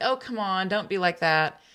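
ordinary talk, nothing marked

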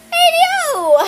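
high, loud, belted mock American accent.

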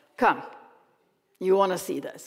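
growling delivery. Narrator reading a character urging another to come see something, growling. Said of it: "he growled".

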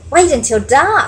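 eager, bright, excited tone. Stellaluna speaks to the birds hanging by their feet, excitedly. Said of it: "Stellaluna said excitedly".

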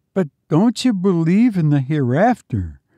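high, frightened, fearful and pitiful voice. A narrator reads Biggs questioning the banker, in a fearful, pitiful voice. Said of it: "a horrible note of fear in his pitiful voice".

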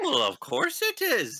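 very high-pitched, slightly affronted, mildly offended tone. A game master voicing a character answers a player's doubtful question, mildly offended. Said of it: "He looks mildly offended at your suggestion".

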